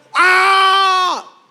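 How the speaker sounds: put-on high, loud child's scream.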